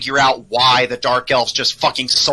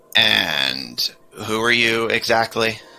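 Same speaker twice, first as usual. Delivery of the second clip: surprisingly deep, slow rumbling voice; 3 semitones lower, 3 dB quieter than usual. Voicing a Saurian who wakes and sizes up the party: surprisingly deep rumbly voice. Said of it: "speaks in this kinda surprisingly deep, kinda rumbly voice".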